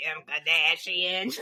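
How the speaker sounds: put-on Boston vowels on the name. Imitating a makeup person who fakes a Boston accent: imitating a fake Boston accent. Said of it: "she very much fakes, like, a Boston accent".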